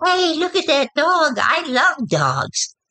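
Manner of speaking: sudden, very high, swooping younger voice. Explaining signs of a personality switch, demonstrating a sudden younger voice. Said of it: "suddenly you hear this younger voice going".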